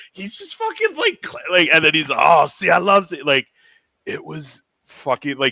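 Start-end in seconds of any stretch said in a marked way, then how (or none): 2.1-3.3 put-on drunk voice, loud, slow, drawn out. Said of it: "fucking drunk".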